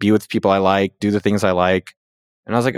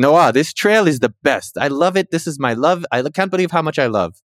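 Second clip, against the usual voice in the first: put-on French accent, pitched up; 6 semitones higher than usual. Retelling what a guy met while biking said, in a French accent. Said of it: "but I'll do French".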